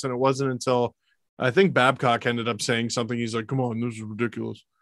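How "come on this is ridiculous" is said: soft, low-key, understated coach voice. Recounting a coach's complaint about the refs: Babcock impression. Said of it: "My impression's out of practice".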